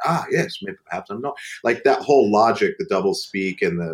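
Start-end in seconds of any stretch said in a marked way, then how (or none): 0.1-1.4 put-on high, silly, daft English accent. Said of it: "try to do as many of those accents".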